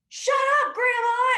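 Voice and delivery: shrill, very high, very loud screaming yell. Retelling a movie scene where a character yells at his grandma: imitating Glenn screaming. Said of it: "just is screaming at his grandma".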